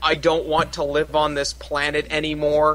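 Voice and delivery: ordinary talk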